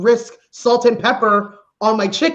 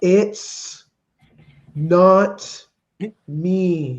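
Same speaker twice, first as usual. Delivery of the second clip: slow, lower-pitched, condescending politician voice; 5 semitones lower than usual. Breaking up with someone Trudeau style, super slow. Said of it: "You just gotta do it Trudeau style".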